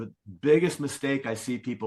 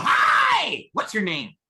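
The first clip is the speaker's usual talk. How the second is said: creepy, raised, swooping, drawn-out voice; 7 semitones higher, 6 dB louder than usual. Showing a listener how walking up and greeting someone can land; creepy tone. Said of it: "it's the tone... you feel the creep vibe".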